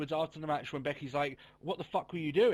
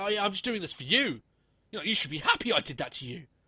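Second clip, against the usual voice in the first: very bitchy, catty, dismissive tone, acted out. Retelling what Charlotte said to Becky: imitating Charlotte, very bitchy. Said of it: "which she came out with very bitchy".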